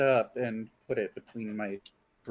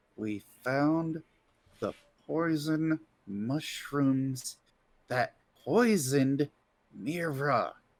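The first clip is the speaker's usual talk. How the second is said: whisper, higher pitched; 3 semitones higher than usual. Playing a character who grabs someone by the shoulder: whispering in his ear. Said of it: "I'm going to whisper in his ear".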